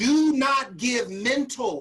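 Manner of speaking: slow, loud, emphatic, repeated delivery.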